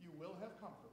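soft-spoken, quiet, matter-of-fact delivery. Showing different ways to read a verse, speaker says it as a statement of fact. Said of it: "as a statement of fact".

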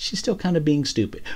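high-pitched, placating tone. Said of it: "she can be like".

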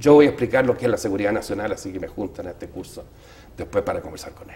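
plain

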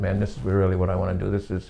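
usual speaking voice

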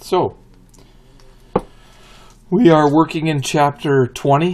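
voice cracking. Introducing chapter 20 in a class video: voice cracking. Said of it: "Excuse the voice crack there".

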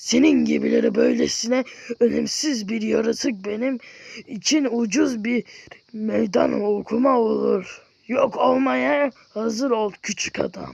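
loud, rough, creaky put-on character voice. Trying to speak in someone's tone of voice: put-on character voice. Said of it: "onun ses tonuyla konuşmaya çalışayım".

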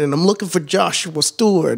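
put-on, Italian-toned northern accent. Retelling a stranger at the door asking for him, in an Italian-toned northern accent. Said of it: "like real, like Italian toned".

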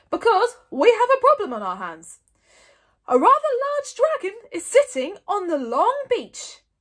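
very loud, big, booming call. Stoic addresses a crowd packed into the great hall; booming. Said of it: "boomed Stoic".

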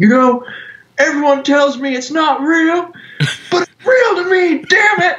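put-on very high voice on the verge of tears, outburst. Retelling a viral clip of an old fan at a Q and A: imitating a tearful old man. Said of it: "he just starts, like, tearing up".

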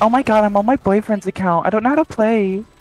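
put-on, fake female voice. A player acting out what they say to others in the game, in a put-on woman's voice. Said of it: "you sound like a woman".

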